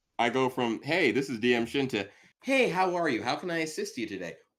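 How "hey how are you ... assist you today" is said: fake-friendly service voice, pitched octaves higher. Imitating how they greet people: much higher, put-on friendly voice. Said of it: "my voice goes up so many octaves".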